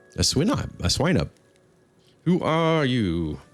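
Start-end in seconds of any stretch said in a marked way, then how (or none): 2.3-3.4 taunting, obnoxious voice. Voicing an elf mimicking a player's question: obnoxious mimicking voice. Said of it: "mimicking you in an obnoxious voice".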